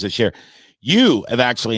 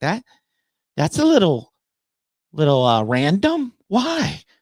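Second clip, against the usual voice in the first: high, swooping put-on voice; 8 semitones higher than usual. Retelling a reply from the speaker's better half: impression of her voice. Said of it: "spot on impression, by the way. That's her voice".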